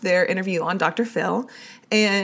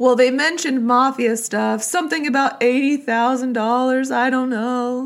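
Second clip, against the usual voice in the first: slurred, smeared speech with words run together; 5 semitones higher than usual. Recounting a phone call, imitating Candace's slurred speech. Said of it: "does she talk like that all slurred".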